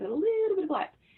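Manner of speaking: very high-pitched speech. Retelling how mom always said her ancestry: imitating mom's way of saying it.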